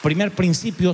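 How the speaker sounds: ordinary delivery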